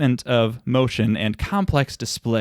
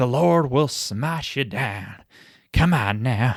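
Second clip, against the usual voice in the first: put-on slow, thick, extreme Southern accent. Discussing the accents of a film's actors, imitating Piper Laurie's extreme accent. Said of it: "has a pretty extreme accent as well".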